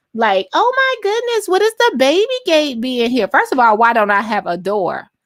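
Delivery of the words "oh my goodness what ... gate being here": mock gushing, overdone sweetness, very high pitched. Retelling how someone in a clip acted, imitating someone laying it on thick.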